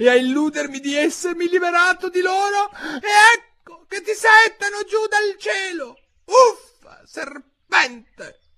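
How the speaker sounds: very high, rising, screeching shriek. Reading a story, a pigeon raises its voice at a girl; shrieking. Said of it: "alzando la voce fino al garrito".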